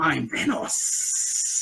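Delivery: breathy, hissing snake voice with drawn-out s sounds. Showing how a character stretched his S's: imitating a hissing snake-like voice. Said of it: "'cause of the S's were like".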